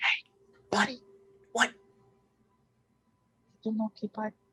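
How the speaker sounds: hushed whisper. Playing a scene, pulling Kato down to their level to speak to him, whispering. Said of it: "whisper for him to get down to my level".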